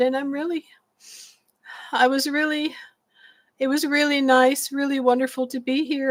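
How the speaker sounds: emotional, teary, all choked-up voice. Retelling a thank-you speech to a class: retelling being choked up. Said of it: "I got all choked up".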